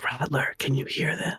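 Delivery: hushed, breathy whisper. Describing trying to reach Rattler quietly, the speaker is retelling a whisper. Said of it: "I'm going to whisper at a at a volume".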